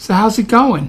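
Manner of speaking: mock-sweet put-on voice with sweet tone. Retelling his wife's question after a sparring match: imitating his wife's sweet tone. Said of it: "with that sweet way that only a wife can do".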